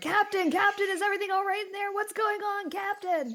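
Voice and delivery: shrill, very loud, high-pitched shouting. People trying to get past call out to the Captain, yelling. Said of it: "they're yelling like".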